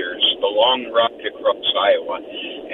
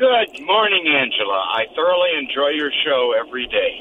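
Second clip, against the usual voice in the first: bright, glad, happy, cheerful voice; 3 semitones higher than usual. Caller greeting the radio host Angela, sounding happy. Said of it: "You sound happy".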